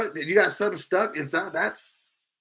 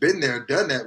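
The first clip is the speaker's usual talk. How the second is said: usual speaking voice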